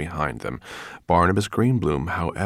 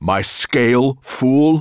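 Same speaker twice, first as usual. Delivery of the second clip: vicious snarl, high pitch, very loud; 8 semitones higher, 9 dB louder than usual. Narrating a figure demanding his scale back from a man, snarling. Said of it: "Nettlebrand snarled".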